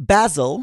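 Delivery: British accent, British-style pronunciation. Reading out the first multiple-choice answer: British accent. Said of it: "this first one I'll try to say with the British accent".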